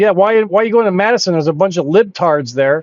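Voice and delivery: ordinary talk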